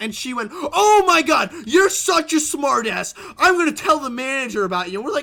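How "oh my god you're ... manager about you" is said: loud, screaming tirade. Retelling what a customer screamed at your friend in a restaurant; imitating a screaming customer. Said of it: "Lady, you're screaming".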